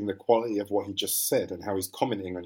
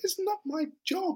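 put-on child voice, much higher pitch. Recalling a line from Blue Orange, doing David Haig's child voice. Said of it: "he just did a child voice".

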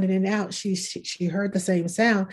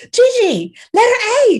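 put-on very shrill, very loud, very high child scream; 9 dB louder than usual. Retelling a child calling out during church prayer: imitating a child screaming. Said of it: "she screams out".

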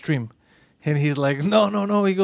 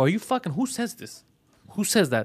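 mild, restrained put-on yelling; 3 semitones higher, 5 dB quieter than usual. Retelling reading a friend's messages and yelling at him: retelling own past yelling. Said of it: "and I would yell at him".

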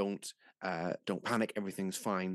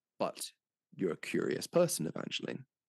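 ordinary delivery

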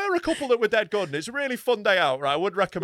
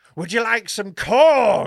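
slow, loud, unconvincing attempt at a creepy voice; 8 dB louder than usual. Retelling an actor in a corn maze trying to sound creepy: imitating a failed creepy voice. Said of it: "he's trying to be creepy".

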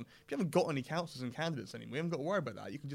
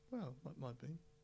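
flat and unexcited, quieter; 11 dB quieter than usual. Asked whether the Brexit outcome would be exciting, answering while not sounding excited. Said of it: "You don't sound excited".

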